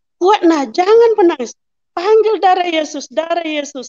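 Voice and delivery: urgent, encouraging, urging tone.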